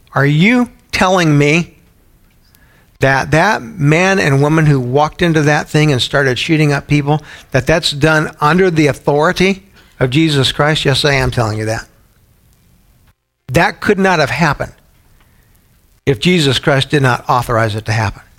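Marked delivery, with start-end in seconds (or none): none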